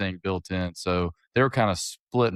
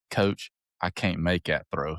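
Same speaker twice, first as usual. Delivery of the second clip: put-on, laid-on country-boy accent; 2 semitones lower than usual. Coach telling a story, quoting a player who refuses the play, country accent. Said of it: "with this country accent and goes".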